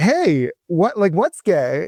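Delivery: slow, mocking delivery. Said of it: "I just make a mockery of it".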